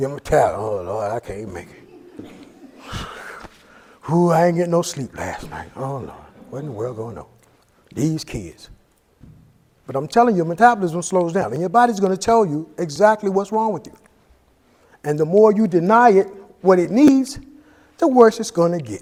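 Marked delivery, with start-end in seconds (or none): 0.6-8.7 very low, very soft, weary grumbling moan. Imitating a listener who complains of being tired: imitating a tired person. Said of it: "you're wondering why I'm so tired".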